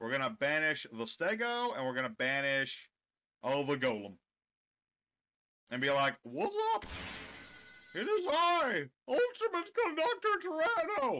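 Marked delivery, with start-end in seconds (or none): 6.2-11.2 squeaky, very high character voice. Voicing a dinosaur card as it enters play: squeaky Ultimate Conductor Tyranno voice. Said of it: "that's what his actual voice would be".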